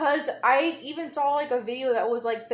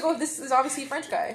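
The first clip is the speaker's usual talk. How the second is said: usual speaking voice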